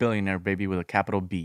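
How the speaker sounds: usual speaking voice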